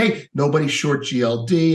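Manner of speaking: ordinary talk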